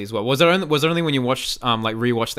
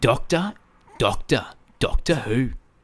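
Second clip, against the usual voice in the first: exaggerated, over-the-top Australian accent. Trying out an accent mid-conversation, exaggerated australian accent. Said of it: "How can I even do an Australian accent?".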